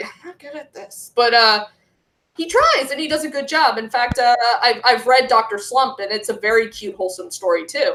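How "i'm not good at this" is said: very soft, hushed, put-on voice. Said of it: "He's like".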